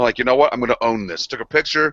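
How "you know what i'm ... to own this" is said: ordinary talk, nothing marked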